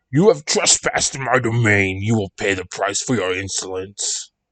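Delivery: deep, menacing, threatening, ominous voice. Reading a scary story aloud, the pumpkin creature speaks: deep, menacing voice. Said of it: "The creature spoke in a deep, menacing voice".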